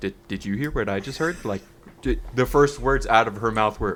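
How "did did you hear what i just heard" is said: acted flat deadpan tone. Retelling a line said to a friend after a scary remark: imitating a deadpan question. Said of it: "deadpan stare at each other and go".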